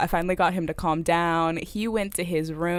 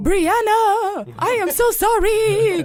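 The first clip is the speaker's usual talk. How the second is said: put-on yell, higher and louder; 7 dB louder than usual. Retelling a drunk date yelling an apology outside the window: imitating someone yelling. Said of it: "he started yelling out of my window".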